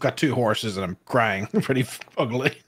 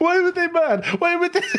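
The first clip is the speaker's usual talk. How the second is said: mock, very high, tearful, bewildered crying whimper; 3 dB louder than usual. Acting out how she cried behind trees near a pumpkin farm, imitating someone crying. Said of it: "she's like crying behind some trees".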